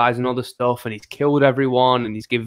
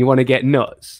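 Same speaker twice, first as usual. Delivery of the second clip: put-on movie-character scream; 4 dB louder than usual. Retelling a movie scene, quoting the character's line; imitating Bruce Wayne screaming. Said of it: "he starts screaming".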